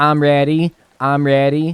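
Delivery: loud, high, eager cartoon voice, shouted. Giving friends a guessing-game clue, doing a SpongeBob voice. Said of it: "he's like this yellow sponge, and he goes".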